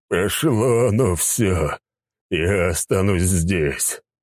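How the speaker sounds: groaning, completely spent, exhausted. An exhausted character collapses beside a sleeping companion, exhausted groaning. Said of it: "простонал Сигизмунд".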